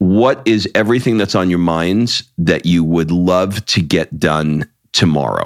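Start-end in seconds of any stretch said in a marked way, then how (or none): none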